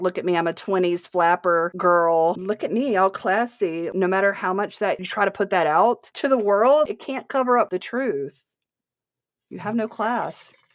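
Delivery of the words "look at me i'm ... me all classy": usual speaking voice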